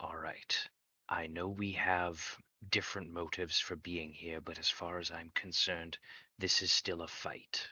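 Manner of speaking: hushed, slow undertone. A character turns back to the other two, low, hushed voice. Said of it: "he's going to say in a low, hushed voice".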